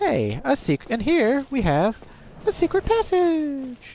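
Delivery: very high, slow, drawn-out upward lilt. Trying to imitate HC Bailey announcing a secret passage, upward inflection. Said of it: "I don't have H C Bailey's voice".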